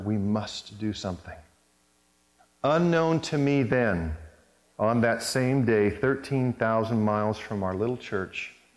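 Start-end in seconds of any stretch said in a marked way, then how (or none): 0.0-1.3 shaky, trembling near whisper, quieter. Speaker recounts the pastor stopping his sermon, retelling a shaky near whisper. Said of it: "his voice shaking, Mike said in a near whisper".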